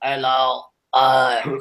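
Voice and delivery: low, mechanical, robotic synthesized speech-device voice. Describing a guy who talks into a device: imitating a talking-machine voice. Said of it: "that's what he sounds like".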